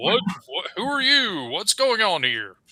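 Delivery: big, high, booming voice, swooping. Storyteller voicing a figure answering screaming sailors outside, in a big booming voice. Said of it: "you hear like a big booming voice".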